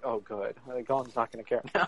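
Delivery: ordinary delivery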